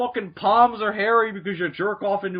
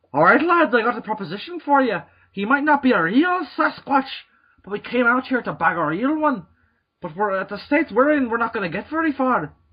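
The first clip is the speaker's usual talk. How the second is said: put-on Irish accent; 3 semitones higher than usual. Acting out a man pitching a proposition to the lads in a story, put-on irish accent. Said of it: "He's Irish now".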